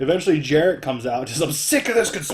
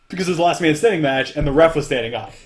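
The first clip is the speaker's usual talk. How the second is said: ordinary talk, nothing marked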